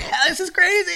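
mock, very high, cackling exclamation. Describing a movie character watching himself on screen, imitating cackling.

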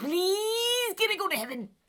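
high, pleading, begging voice.

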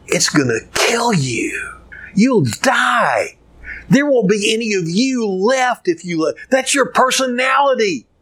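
high stage half-whisper with the word die drawn out. Acting out what Satan half-whispers in your ear: Satan half-whispering. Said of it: "Satan is gonna whisper in your ear".

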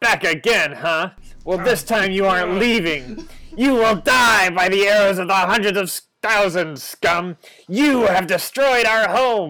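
sharp shouting voice. Game master voicing a voice in the trees shouting down at the players, sharp shouting voice. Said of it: "You hear a sharp voice in the trees shout down to you".

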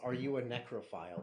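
plain

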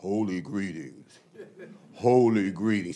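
very deep, very low, slow voice. Recalling how his late spiritual father answered the phone, imitating his deep voice. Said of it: "He had this real deep voice".

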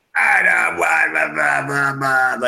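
slow, gravelly drawl like grinding gravel. Imitating Nick Nolte's character from Broadchurch: gravelly Nick Nolte voice. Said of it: "He just sounded like gravel".

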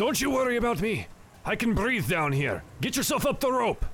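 sea captain voice, spluttering out the words. The game master voices a ship captain speaking to a player's character, sputtering. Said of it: "He is a water ganassi. / But he looks up / The captain is sputtering here".

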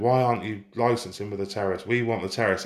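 plain

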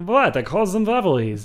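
loud, swooping, exaggerated cartoon German accent. Discussing a movie's title with others, imitate the man behind it in a cartoon German accent. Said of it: "you sound like a cartoon, like a cartoon German".

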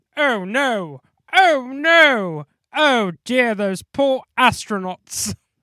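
big, booming, very slow, very loud, heavy character voice. Imagining Henry reacting to news on TV in George Gaines voice. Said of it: "I love doing George Gaines's voice".

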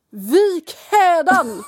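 forceful voice. Acting out what a guy at a pub says, in a powerful voice. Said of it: "kraftfull röst".

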